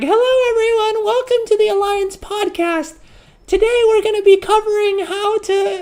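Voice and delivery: put-on very high, squeaky little young kid voice. Imitating their younger self opening an old archived podcast episode, in a squeaky little voice. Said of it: "you just hear my squeaky little voice going like".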